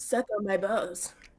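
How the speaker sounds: put-on cartoon boy voice. Discussing Cartmanisms with co-hosts, breaking into a Cartman impression. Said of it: "I'm doing it".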